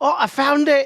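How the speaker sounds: put-on Scottish accent. Repeating another player's call after finding a die: imitating a Scottish-sounding exclamation. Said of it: "It sounded Scottish".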